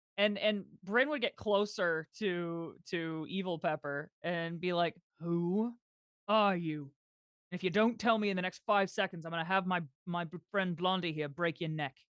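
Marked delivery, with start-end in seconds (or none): 5.2-11.9 menacing, intimidating, threatening tone. Playing a character who confronts a stranger and demands answers: threatening. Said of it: "Is that intimidation".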